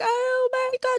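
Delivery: put-on crying voice. Retelling a kid's phone call about police: imitating sobbing. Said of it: "she was sobbing".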